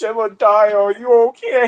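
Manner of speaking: high, genuinely worried and concerned tone. Retelling how Toad asked Jebediah: imitating Toad sounding concerned. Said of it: "genuinely sounds concerned".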